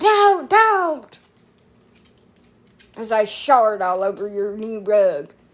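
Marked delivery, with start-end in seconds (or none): 0.0-1.2 very high, loud, shrieking scold. Speaker acts out someone screaming over a mess on a new rug; retelling a scream. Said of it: "why you're screaming at them".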